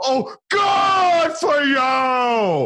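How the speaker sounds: shrill, very high, very slow yell, stretching "you". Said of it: "he would just yell at the guy".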